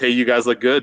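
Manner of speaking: ordinary talk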